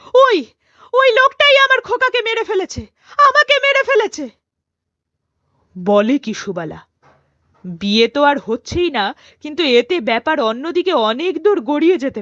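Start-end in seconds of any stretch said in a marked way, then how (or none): 0.1-4.3 furious, enraged, accusing tone, higher and louder. Reading a story aloud, a woman accuses a man of killing her son: furious, vengeful voice. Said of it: "সুবালার তীব্র আক্রোশপূর্ণ গলা".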